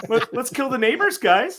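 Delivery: very high talking-dog voice. Acting out the devil dog's lines in the talking dog meme voice. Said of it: "he was doing that voice".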